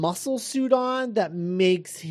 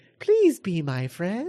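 sweet, sing-song little toy robot voice; 2 semitones higher than usual. Imitating how a character talks: high-pitched little robot voice. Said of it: "a high-pitched little robot voice".

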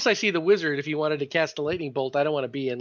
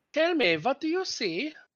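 fake German accent, higher; 10 semitones higher, 3 dB quieter than usual. Asking another player what they see, in a put-on German accent. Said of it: "Hear this German accent".

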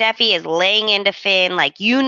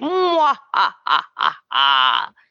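slow, swooping cackle like a cartoon villain. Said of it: "Just giggling to herself like an evil villain from Disney".

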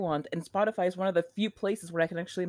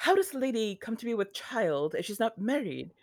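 put-on British accent; 3 semitones higher than usual. Retelling a favorite scene from a show, quoting Eloise in a British accent. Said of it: "aside from your British accent".

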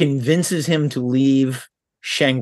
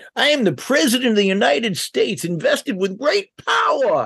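very high, old-fashioned put-on voice; 9 semitones higher than usual. Imagining an American actor cast as Lincoln: Walter Brennan impression. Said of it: "It's Walter Brennan. Okay".

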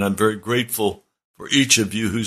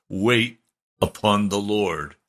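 grand, lofty, authoritative, magisterial tone. Retelling the first thing a man said to him: imitating a magisterial voice. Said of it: "he said it in a magisterial voice".

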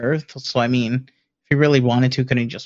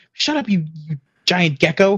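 put-on creature yell, much higher pitch; 5 semitones higher than usual. Retelling a Pokémon story, the speaker voices Groudon snapping at another Pokémon: imitating Groudon yelling. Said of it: "Groudon just yells at him".

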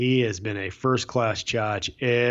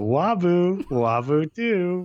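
put-on baby talk, pitched higher; 8 semitones higher than usual. Retelling what a college roommate said during phone calls: imitating Lenny's baby talk. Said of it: "like baby talk".

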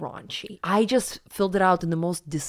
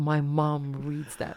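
put-on tearful complaining voice, lower; 3 semitones lower than usual. Retelling what a crying classmate said at school: imitating someone crying. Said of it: "she's, like, crying".

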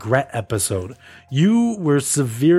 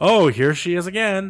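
mock snide passive-aggressive tone; 2 semitones higher than usual. Imitating a friend greeting Brienne: imitating someone passive-aggressive. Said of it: "passive aggressive to her face".

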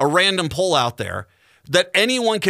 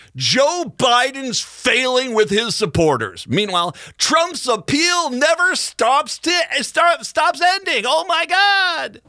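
pitched-up TV newscaster headline-reading delivery; 8 semitones higher than usual. Speaker doing an impression of what the news is like nowadays. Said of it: "Here is my impression of what the news is like nowadays".

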